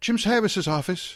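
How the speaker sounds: put-on Irish accent, pitched very high. Retelling a phone call to an assistant: imitating Peggy Medina's Irish accent. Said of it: "has a, an Irish accent".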